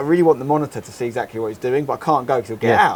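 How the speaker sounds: ordinary delivery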